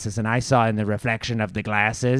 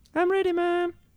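put-on very high voice of a small boy. Voicing the child brought in to be heard: Little Dusk voice. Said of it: "that must be Little Dusk".

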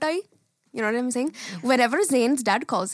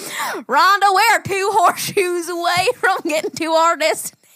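silly fake Southern accent, high and loud; 6 semitones higher, 6 dB louder than usual. Getting loopy at the end of a road trip, put-on southern accent. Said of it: "Most of the time it ends up southern".

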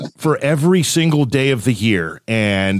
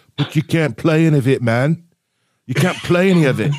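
poor, clumsy attempt at an Australian accent; 3 semitones higher than usual. Speaker quoting what another man told him, in a bad australian accent. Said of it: "That was my worst attempt at Australian".

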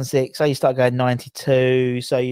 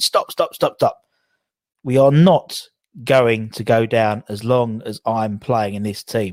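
ordinary delivery

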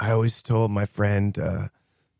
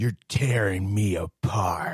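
slow, indignant, angry, regal noble outburst. Performing a famous film line on request: angry, noble manner. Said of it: "angry, noble, angry manner".

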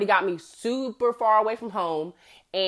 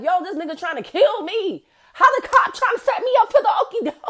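panicked, frazzled, high, raised outburst; 12 semitones higher, 6 dB louder than usual. Retelling calling a cousin while following a cop on the highway, frazzled. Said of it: "I was frazzled I was like".

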